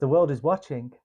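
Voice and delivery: ordinary delivery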